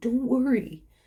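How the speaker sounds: barely-there, very soft, hushed half-whisper. Speaker retells a little voice that sounded like their grandpa, in a very soft half-whisper. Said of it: "It was a very soft whisper".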